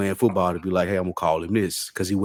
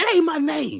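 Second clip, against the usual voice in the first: play-acted, shrill, very high, fed-up kid's yell. Retelling yelling back at a coach at eight years old: imitating own childhood yell. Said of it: "that's what I yelled to him".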